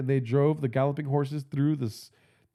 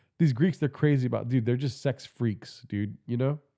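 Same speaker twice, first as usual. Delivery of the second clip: normal talking voice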